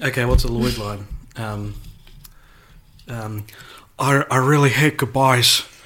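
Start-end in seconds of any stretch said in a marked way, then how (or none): 4.0-5.6 movie-star style delivery with a stammer. Doing a movie line on request as Nicolas Cage: Nicolas Cage impression. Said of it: "That was my Nicolas Cage impression".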